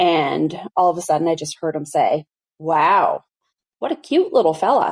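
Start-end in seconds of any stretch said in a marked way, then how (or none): 2.6-4.9 faintly creepy voice, acted out. Retelling a strange man's remark that startled the speaker: imitating a creepy tone. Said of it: "in like a bit of a creepy tone".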